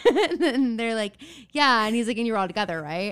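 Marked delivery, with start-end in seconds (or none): 2.2-3.1 put-on old-fashioned detective voice. Retelling what he said to the group, old-timey detective voice. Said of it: "he's talking like an old timey detective".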